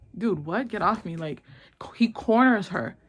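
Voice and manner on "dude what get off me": usual speaking voice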